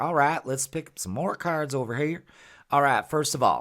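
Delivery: put-on cowboy-style Western accent. During a tarot card reading, the speaker switches to a put-on Western voice. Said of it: "a Western voice".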